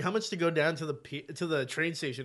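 ordinary talk, nothing marked

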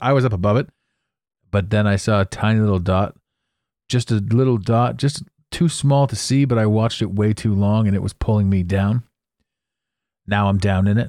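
ordinary talk, nothing marked

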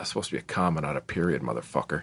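mock under-the-breath mutter. Retelling a reply to an apology: retelling a mutter under breath. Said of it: "I said under my breath".

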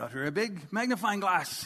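put-on voice with a French accent. Retelling what a French man said as he opened the bag, French accent. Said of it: "he's French and he talks like that".

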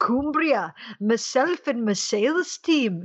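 put-on slow, lilting Scottish accent. Imitating a salesperson from scotland: imitating a scottish accent. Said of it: "with his adorable Scottish accent".

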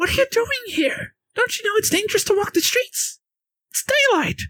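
very high, lively, animated gingerbread man voice. Voicing a gingerbread man who points at the players: animated gingerbread man voice. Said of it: "is a gingerbread man, animatedly pointing at you and goes".

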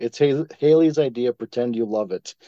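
ordinary talk

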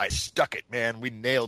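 ordinary talk, nothing marked

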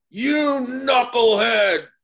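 loud booming voice. Retelling how a hero called the speaker over, in Charlie Jones's booming voice. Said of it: "I hear this booming voice".

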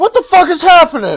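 screaming in panic, high and loud.

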